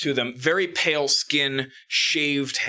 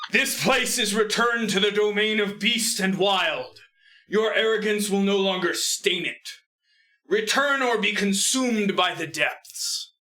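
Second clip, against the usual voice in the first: big booming declaiming voice, pitched up; 7 semitones higher than usual. A voice calls out from in front of the ship, booming voice. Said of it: "suddenly hear a booming voice".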